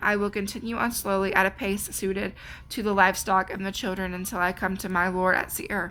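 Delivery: ordinary talk, nothing marked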